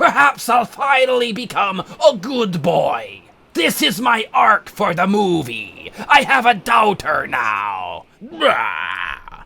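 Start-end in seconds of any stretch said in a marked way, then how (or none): 0.0-8.0 put-on pirate voice. Acting out a scene as Barbossa finding out he has a daughter: Barbossa voice. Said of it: "I'm Barbossa".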